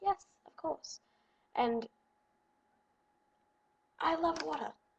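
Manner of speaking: put-on British accent. Retelling chatting with gullible people while posing as british, british accent. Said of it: "talking in a British accent".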